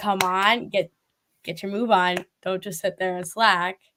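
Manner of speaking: ordinary delivery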